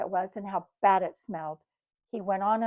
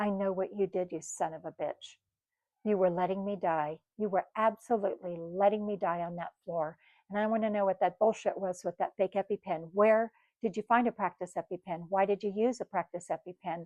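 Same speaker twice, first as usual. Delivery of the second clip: ordinary talk, nothing marked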